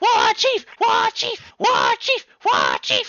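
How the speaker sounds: goblin voices cheering. Voicing goblins cheering for the war chief: cheering goblins. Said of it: "start cheering at you".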